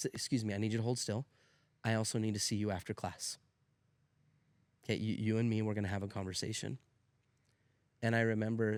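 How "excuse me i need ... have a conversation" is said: put-on teacher voice, firm but quiet. Retelling a teacher's words to a tapping student: imitating Mister Jensen firmly but quietly. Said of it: "he firmly, uh, but, but, but quietly just said".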